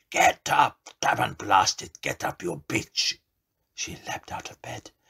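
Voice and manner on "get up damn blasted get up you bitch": raging, furious, thunderous bellowing shout. Narrator reads the voice of her drowned man bursting out, a furious thunderous shout. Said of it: "the furious voice burst out, the thunderous voice of her drowned man shouting".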